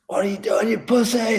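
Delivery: acted, very high, screaming, taunting yell. Retelling a riding partner screaming at them to roll through, imitating someone screaming. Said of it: "Like screaming at me to roll through".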